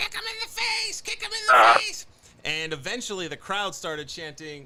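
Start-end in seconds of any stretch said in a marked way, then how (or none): 0.0-2.1 put-on screaming child voice. Retelling a little kid at a show: imitating a kid screaming. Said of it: "a little kid who kept screaming".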